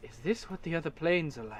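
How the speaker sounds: very soft, hushed mutter under the breath. Game master voicing a mage who stares at the two players, muttering under his breath. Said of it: "and under his breath".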